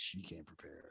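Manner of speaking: suggestive, lusty, breathy, barely above a whisper. Retelling how Daniel Ricciardo said a line: imitating Daniel Ricciardo saying it randy. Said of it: "he said it, like, kinda randy".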